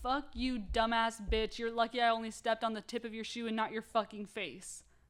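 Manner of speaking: put-on angry snapping, furious outburst. Retelling a man's account of snapping at a woman: imitating someone snapping angrily. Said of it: "I fucking snapped".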